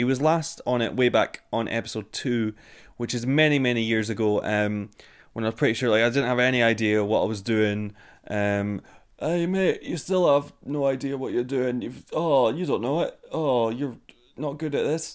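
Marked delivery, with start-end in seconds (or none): 8.3-15.1 mean, jeering put-on heckler voice. Speaker heckles his own past self in a mean heckler voice. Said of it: "that was a mean heckle from me doing a voice".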